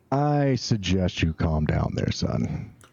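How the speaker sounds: slow, looming, menacing in-character voice. Playing a captor standing over a manacled prisoner: menacing in-character voice. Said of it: "I'm standing here menacingly".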